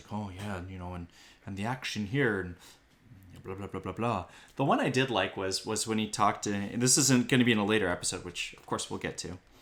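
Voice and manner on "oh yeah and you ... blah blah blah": mock thoughtful musing, lower and quieter. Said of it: "deep in thought about these characters, like".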